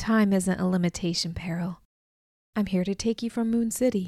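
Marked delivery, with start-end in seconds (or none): none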